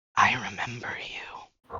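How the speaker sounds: softly whispered. In a guided narration, a voice speaks to the listener in a whisper. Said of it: "And there's a whisper".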